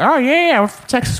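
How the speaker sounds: voice pushed way up, cartoon dad voice. On the phone with an old lady, answering her in a Peter Griffin voice. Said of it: "I was doing that Peter Griffin impression".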